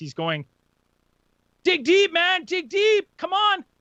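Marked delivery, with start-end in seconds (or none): 1.6-3.6 very high, shrill, loud cheering yell. Retelling a colleague cheering on a runner: imitating someone yelling. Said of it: "he's just yelling literally what everyone else yells".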